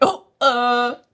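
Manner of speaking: put-on panicked voice. Retelling how a character reacted when called: imitating someone panicking. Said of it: "she's, like, panicking".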